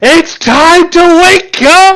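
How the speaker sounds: shrill, very high, loud yell. Luthien leans right next to sleeping Nathalie's ear, yelling. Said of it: "gently goes goes up to her ear and yells".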